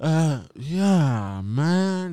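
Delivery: put-on high voice, slowed way down, stoned drawl. Retelling talking to a dad on the phone while high: imitating slowed-down high speech. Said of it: "Just I slow down like crazy".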